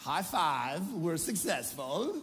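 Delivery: jokey, comic, put-on Kazakh accent. Explaining how parents coordinate, the speaker celebrates success, Borat voice. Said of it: "That's my Borat voice".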